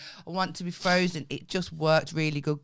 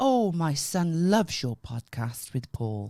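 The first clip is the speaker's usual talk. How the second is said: put-on slow, drawn-out, very posh old-lady voice. Retelling a stranger at a lift who recognised them: imitating a posh woman. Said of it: "She was very posh".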